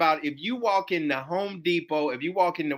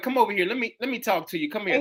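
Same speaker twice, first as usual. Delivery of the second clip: plain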